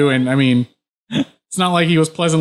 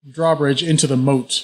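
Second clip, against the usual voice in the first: plain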